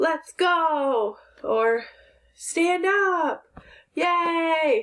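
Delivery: enthusiastic, excited, high, drawn-out reading voice. Explaining how an exclamation point sounds when you read it aloud: excited reading voice. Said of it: "You'll hear it in your voice as you're reading".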